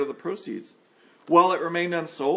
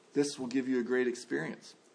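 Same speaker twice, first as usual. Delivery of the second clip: coaxing, enticing, tempting, hushed stage whisper; 3 semitones lower, 8 dB quieter than usual. Preaching about temptation, voicing the devil's half-whisper: imitating the devil half-whispering. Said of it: "he whispers".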